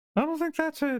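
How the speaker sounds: very high mouse voice.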